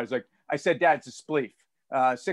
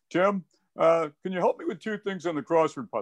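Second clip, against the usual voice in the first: teasing, caricatured put-on dad voice. Retelling his father calling him up today; imitating his dad's voice. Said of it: "that's the dad imitation".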